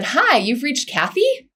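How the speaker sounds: rising question-like tune lifting the final word. Speaker quotes their mother's voicemail greeting as an example; imitating Kathy's rising upspeak. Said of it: "she had her upward upward intonation when she said her name".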